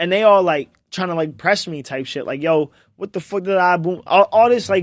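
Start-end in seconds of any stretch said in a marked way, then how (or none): 2.4-4.0 mocking, put-on rough street-style New Jersey accent.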